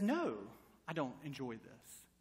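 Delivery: put-on soft, mild, lilting British accent. Retelling a talk with a rose bush while pruning it: gentle British accent. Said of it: "in a very gentle British accent".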